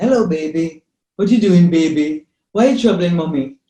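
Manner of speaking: low basal bass voice, calming. Explaining infant calm, the speaker demonstrates talking to a baby in the womb: deep bass voice. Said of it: "I heard that deep basal tone".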